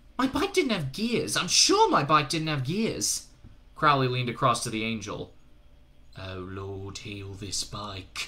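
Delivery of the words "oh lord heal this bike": slow, sarcastic half-whisper under the breath. A narrator reads one character leaning across to the angel: sarcastic half-whisper. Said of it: "he whispered sarcastically".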